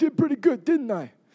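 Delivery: put-on New York accent. Acting out how people boast after pulling themselves out: put-on new york accent. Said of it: "It sounded like a New York accent".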